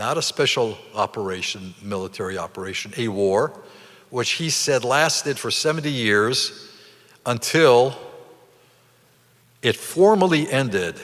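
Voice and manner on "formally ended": formally stressed, pitched high and said slowly. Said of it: "emphasis on the word formally ended".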